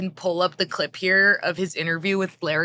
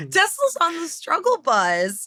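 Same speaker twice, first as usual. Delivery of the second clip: very high, teary voice right after laughing; 10 semitones higher than usual. Starting on Tesla news after laughing to tears: teary from laughing. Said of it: "and I sound sad about that".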